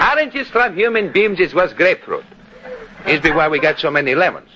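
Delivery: Greek dialect. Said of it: "that Greek dialect of yours".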